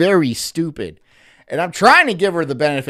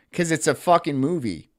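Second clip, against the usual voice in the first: plain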